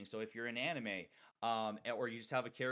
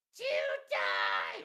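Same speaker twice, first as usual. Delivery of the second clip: raw, full scream at the top of the lungs; 3 semitones lower, 8 dB louder than usual. Showing how screaming vocalists do not scream: screaming at top of lungs. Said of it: "They don't scream like".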